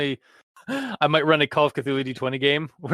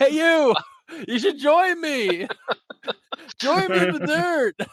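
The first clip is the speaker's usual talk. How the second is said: very high, cartoonish yell; 13 semitones higher than usual. Acting out a ghost calling across a graveyard: imitating cartoonish yelling. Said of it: "yelling at you cartoonily like that".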